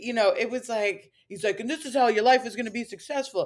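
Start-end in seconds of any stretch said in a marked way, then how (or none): 1.6-3.5 put-on Italian-American New Jersey accent. Imitating a self-care influencer's morning routine advice: imitating in Italian New Jersey accent. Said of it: "I'm making him Italian from New Jersey".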